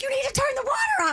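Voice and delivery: very high-pitched, urgent screaming voice. Retelling what he shouted at her as the water gushed, retelling a scream. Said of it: "Like he's screaming as it's gushing".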